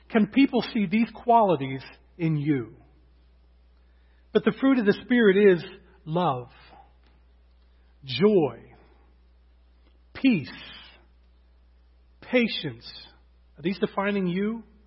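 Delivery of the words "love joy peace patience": slow, deliberate reading, word by word. Reading a list of qualities aloud to listeners, read a little slowly. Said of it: "I'm going to read them a little slowly".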